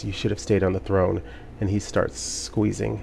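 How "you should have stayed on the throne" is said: rushed, hushed, menacing half-whisper. Game master voicing a character who half-whispers while being held, half-whispering. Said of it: "he whispers".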